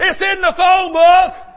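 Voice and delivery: put-on high, loud scream. Telling a joke about a man's nightmare, retelling his scream. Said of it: "And I was screaming".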